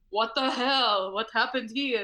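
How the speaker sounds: put-on Jordanian-accented speech. A speaker whose parents live in Jordan imitates their dad: Jordanian dad's accent. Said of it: "I love the accent".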